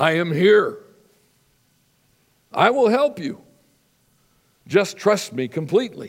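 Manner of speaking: big, loud, booming voice. Telling a joke, voicing the answer to a man calling for help: big booming voice. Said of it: "a big booming voice came out of the dark".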